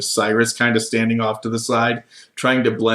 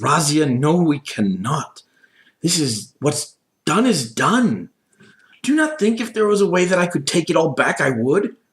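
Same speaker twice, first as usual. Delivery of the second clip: heated, quarrelsome arguing, pitched up; 6 semitones higher than usual. Voicing one side of a fight between two women: arguing. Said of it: "Razia and the Countess arguing".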